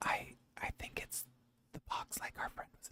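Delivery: breathy whisper, close, soft and quiet. Voicing a character who leans in to the player's character: whispering in someone's ear. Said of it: "She whispers in your ear".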